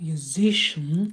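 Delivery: musician, stress on second syllable si. Feedback on stress after a student's reading: stress on second syllable 'si'. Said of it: "на зи падает ударение".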